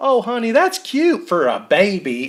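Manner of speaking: exaggerated Texas accent, pitched high and slow. Retelling what a woman on the show said to Bella, in an exaggerated Texas accent. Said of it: "so I'm just making them worse".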